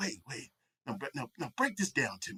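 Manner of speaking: very soft, hushed, halting stop-start speech. Retelling how dad reacted to a story, imitating dad's way of talking. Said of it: "my dad talked like this".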